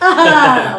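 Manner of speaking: high, loud, drawn-out mock gushing.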